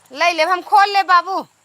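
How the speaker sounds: high, loud call carrying across a room.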